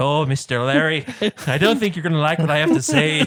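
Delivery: cartoon leprechaun voice. Recounting a favorite Family Guy scene, the speaker does the Family Guy leprechaun voice. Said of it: "it shows the leprechaun. And he's like".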